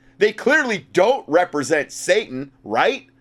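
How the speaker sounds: mock-earnest sarcasm. Commenting on a quoted news article: sarcastic. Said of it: "I obviously being sarcastic".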